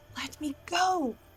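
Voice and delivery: hushed mutter under the breath. Struggling against his grip, a player's character speaks: muttered under her breath. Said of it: "under her breath".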